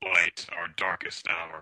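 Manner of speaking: deep, heroic robotic voice. Joking about a laggy connection, doing an Optimus Prime impression. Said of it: "That's a good impression".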